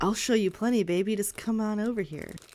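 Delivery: sleazy, leering, creepy voice. Voicing an unseen figure in the dark woods: creepy voice. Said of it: "he sounds like a creep".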